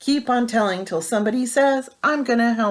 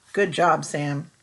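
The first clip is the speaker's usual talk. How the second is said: ordinary delivery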